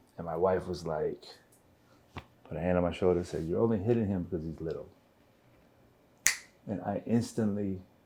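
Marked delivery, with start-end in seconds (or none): none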